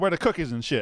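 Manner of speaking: sassy comic voice. Quoting a line from a stand-up routine: sassy Bernie Mac voice. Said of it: "you got sass".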